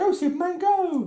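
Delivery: unconvincing, very high put-on woman's voice. Speaker voices a woman cheering on superman, in a put-on woman's voice. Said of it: "another woman's voice".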